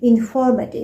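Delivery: informative said with its key syllable stressed. Demonstrating word stress in a pronunciation lesson, stress on informative. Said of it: "putting my stress on the specific syllable".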